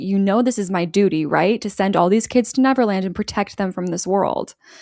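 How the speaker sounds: ordinary talk, nothing marked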